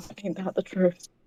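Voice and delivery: very quiet mutter under the breath. Playing a character reacting to another character's words, muttered under the breath. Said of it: "under their breath, really quiet".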